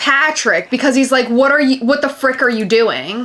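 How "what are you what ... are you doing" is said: put-on angry screech like a kid. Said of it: "he was screeching".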